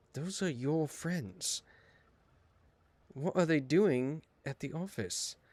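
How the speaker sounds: soft, private mutter under the breath. Voicing a character with a cross look, speaking under her breath. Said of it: "kind of under her breath".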